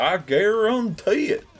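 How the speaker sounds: put-on very high-pitched, loud Southern accent. Doing an impression of a guy from Alabama, Southern accent. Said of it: "whenever we would do impressions of him, the go-to thing was "I guarantee it," just like that".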